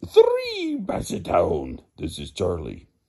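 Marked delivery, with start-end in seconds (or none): 0.1-1.8 booming voice, swooping like a vampire. Counting basset hounds one by one for listeners, in the Count voice. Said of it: "I feel like I'm the Count".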